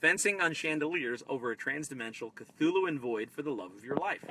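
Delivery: ordinary talk, nothing marked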